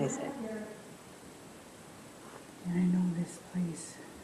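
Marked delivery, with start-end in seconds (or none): 2.7-4.0 soft whisper. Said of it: "I'm whispering".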